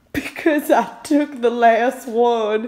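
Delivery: talking through laughter. Explaining a drink bought just now: laughing while talking. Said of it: "I'm laughing because".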